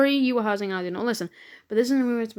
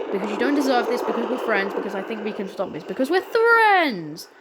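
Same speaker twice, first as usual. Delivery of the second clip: ordinary delivery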